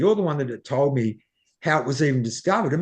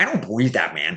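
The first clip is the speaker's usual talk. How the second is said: funny put-on Canadian accent, man's voice; 6 semitones lower than usual. Retelling a man's reply to the speaker's story, imitating Dram's Canadian voice. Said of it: "He's got that Canadian voice".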